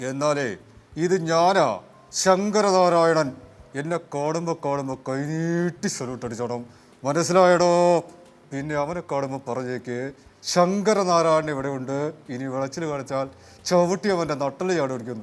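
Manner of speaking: threatening impression, heavy stress on a name. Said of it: "ഭീമൻ രഘു ചേട്ടനും".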